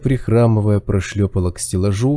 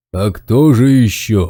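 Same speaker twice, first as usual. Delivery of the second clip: very slow, drawn-out growling voice; 4 dB louder than usual. Narrator reads the bear's reply to the girl's question, growling. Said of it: "прорычал здоровяк".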